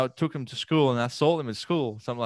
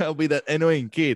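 normal talking voice

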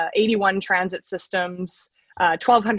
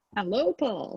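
softer FM radio DJ voice. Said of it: "Use that F M D J voice".

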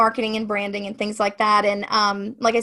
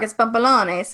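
New York pronunciation. Showing how to say his last name like someone from New York, New York accent. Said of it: "if you want to say like you're from New York".

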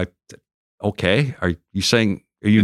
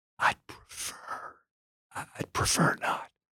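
hushed, very soft, breathy, slow whisper. Retelling asking for an interview and the reply: imitating Muhammad Ali's low whisper. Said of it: "He was whispering at that time".

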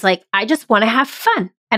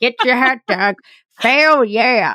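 put-on sleazy, creepy old-man carnival barker voice; 3 semitones higher than usual. A host demonstrates the voice used for long answers: creepy old-man carnival voice. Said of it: "Like you're at a carnival".

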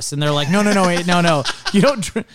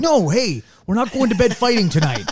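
put-on earnest voice, higher pitch; 4 semitones higher than usual. Imagining how a partner would answer a fight: imitating Baz, earnest. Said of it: "more earnest energy".

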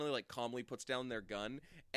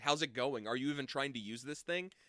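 ordinary talk

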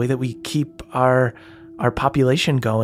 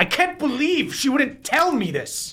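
shrill, very high screaming outburst; 13 semitones higher than usual. Voicing a character who stands up in disbelief: screaming in character. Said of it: "he stands up and he screams".

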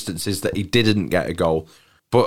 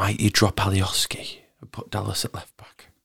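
quiet whispered aside; 6 dB quieter than usual. Asking the others about team selection, whispering. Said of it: "Don't know why I whispered it".

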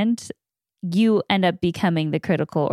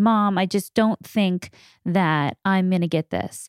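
mock-tearful, upset, crying voice. A mother retells her upset daughter coming to her; imitating Harper crying. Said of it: "she's crying and she's upset and she goes".

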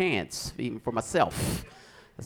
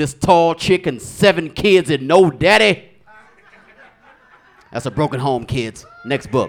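loud, slow, booming voice. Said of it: "He'd be like".

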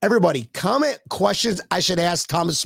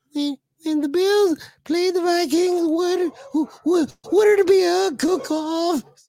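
put-on voice, pitched much higher; 12 semitones higher than usual. Showing how a viewer sounded, the speaker is imitating Mike Runkle. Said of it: "That's what he sounded like".

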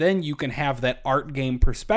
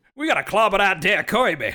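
deliberately terrible, pitched-up put-on Texas accent; 6 semitones higher than usual. Discussing casting with friends, the speaker does King Dedede in a bad Texas accent. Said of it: "the worst Texas accent we can possibly have".

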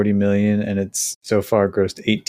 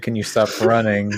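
loud delivery. Mocking another speaker's request about running: imitating someone saying it loudly. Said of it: "he's saying loudly".

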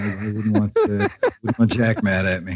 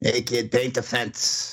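hushed, put-on gangster tough-guy voice; 2 semitones higher, 6 dB quieter than usual. Repeating another speaker's quoted line back, in a mobster voice. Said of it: "I don't think Miyagi sounded like a mobster".

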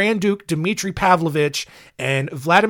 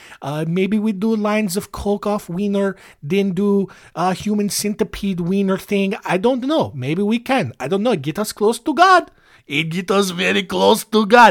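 heavy put-on Russian accent; 3 semitones higher than usual. Host improvising a bit while recording an episode, Rasputin Russian accent. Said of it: "doing very graphic Rasputin Russian accent".

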